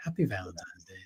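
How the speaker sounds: very low, very soft, hushed loving murmur. Talking about Valentine's Day, the speaker addresses the camera in a lowered voice. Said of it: "I kind of lower my voice and I look into the camera".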